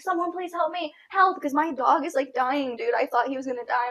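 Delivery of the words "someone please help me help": mock, high, desperate, frantic screaming. Retelling trying to break up a dog fight, imitating her screaming for help. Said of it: "I'm screaming this whole time".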